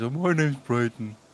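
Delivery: dumb, dopey voice. Trying out a dumb voice for a character. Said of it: "I don't know if I should do the dumb voice".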